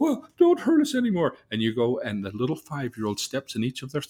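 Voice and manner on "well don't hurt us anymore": acted, very high, loud, tearful crying whimper. Acting out beaten figures begging not to be hurt: mock whimpering and crying. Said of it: "they're whimpering and crying".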